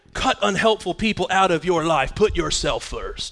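put-on macho, tough-guy delivery. Reading out a self-help meme, in a macho voice. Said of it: "I don't know why I'm talking in some macho voice".

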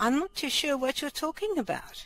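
very high put-on old granny voice. Answering the others asking about the strange noises, old granny voice. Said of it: "Granny voice".

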